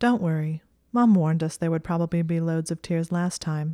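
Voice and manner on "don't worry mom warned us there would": usual speaking voice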